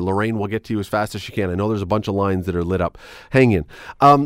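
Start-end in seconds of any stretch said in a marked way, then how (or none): none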